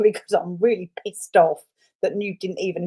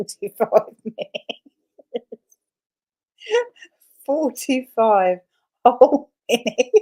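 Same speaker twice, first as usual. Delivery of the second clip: talking through uncontrollable laughter, higher pitch; 5 semitones higher than usual. Repeating how long something lasted, laughing while talking. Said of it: "I can't stop laughing".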